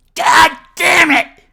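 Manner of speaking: very high, very loud, raspy rough outburst. Asked to redo a line as Cartman: Cartman voice. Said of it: "that was Cartman".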